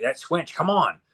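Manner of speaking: put-on yelling, light and high. Retelling a cartoon scene where a character yells for Swinch: imitating a character yelling. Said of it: "as they hear Swinch yelling".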